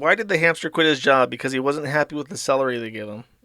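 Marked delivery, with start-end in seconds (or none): none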